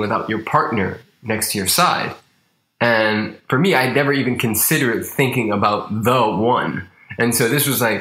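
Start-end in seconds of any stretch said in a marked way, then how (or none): none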